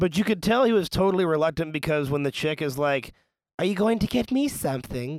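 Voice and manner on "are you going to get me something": put-on high, delicate, dainty little voice with accent. Retelling a woman asking for a gift: little dainty accent. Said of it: "in her little dainty accent".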